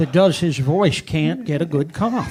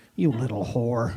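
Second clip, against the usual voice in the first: put-on muttered aside, lower and quieter; 6 semitones lower, 7 dB quieter than usual. Retelling an insult said into the microphone: retelling an under-the-breath mutter. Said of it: "I said under my breath into the microphone".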